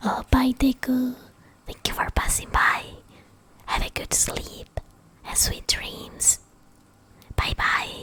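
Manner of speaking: soft, low, breathy whispered near-whisper. Saying goodbye to someone for passing by, soft-spoken. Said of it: "I'm like soft speaking".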